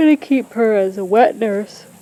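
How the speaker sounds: speaking through a yawn. A tired dog breeder updating followers about a dog, yawning while talking. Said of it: "I keep yawning".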